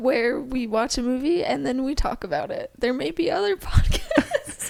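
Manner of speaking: talking through laughter. Introducing the podcast while another speaker teases: laughing while talking. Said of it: "You can't even get through it without laughing".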